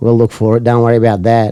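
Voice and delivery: put-on sarcastic tone. Retelling what a tired cop said at four A M: imitating a cop's sarcasm.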